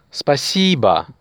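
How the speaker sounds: спасибо said slowly, second syllable stressed.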